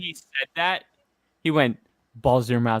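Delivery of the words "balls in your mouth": put-on creepy, hushed whisper. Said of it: "what was that creepy ass whisper".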